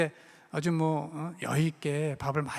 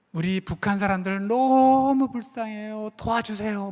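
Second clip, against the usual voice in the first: put-on high, loud, drawn-out tearful child's voice; 6 semitones higher, 7 dB louder than usual. Retelling a child's answer to a question about dreams: imitating a child crying. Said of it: "막 울면서 그러는데".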